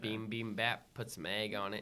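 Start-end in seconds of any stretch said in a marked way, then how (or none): 0.0-0.9 twangy put-on accent. Acting out what the listener said while pointing at a menu, with a twang. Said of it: "the twang you said it in".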